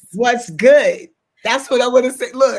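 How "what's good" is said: bit of a put-on Brooklyn accent, raised. Greeting a guest on the show: a little Brooklyn accent. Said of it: "I had to give you a little Brooklyn".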